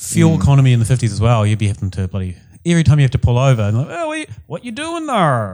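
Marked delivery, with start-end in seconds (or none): 3.9-5.5 very high, swooping, bad put-on American accent. Acting out someone pulled over on a 1950s drive, in a put-on American accent. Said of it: "how Americans talk".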